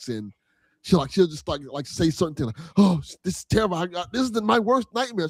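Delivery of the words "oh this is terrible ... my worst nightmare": put-on scared, shaky, shivering mumble. Speaker describing a game's frightened character, imitating terrified mumbling. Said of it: "you hear her like mumbling, like like terrified".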